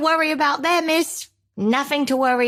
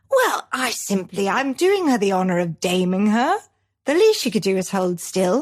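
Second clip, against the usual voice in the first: put-on regal, queenly British accent; 5 semitones lower than usual. Acting as a queen threatening someone in a scene: the Queen British accent. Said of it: "you sounded just like the Queen".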